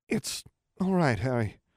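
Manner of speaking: faraway, shell-shocked, dazed and stunned voice. Hestia answers Harry as he rushes to get her to a healer, dazed voice. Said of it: "she said in a dazed voice".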